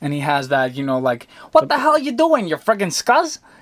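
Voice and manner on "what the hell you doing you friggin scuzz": put-on very high-pitched voice with a Chicago street accent. Imitating an audiobook narrator voicing Eddie: Eddie voice, Chicago guy. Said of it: "it's Eddie, like, a guy from, like, Chicago".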